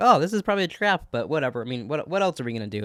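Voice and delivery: ordinary talk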